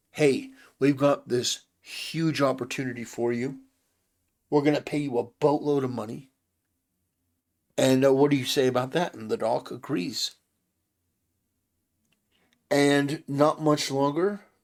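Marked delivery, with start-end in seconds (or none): none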